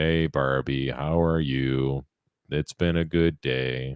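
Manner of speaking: put-on dutiful, boring, flat, level monotone. A dad acting out playing Barbies with his daughter, in a flat monotone. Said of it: "my own monotone way".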